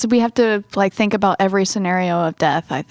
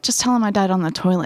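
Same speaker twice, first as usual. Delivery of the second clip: ordinary delivery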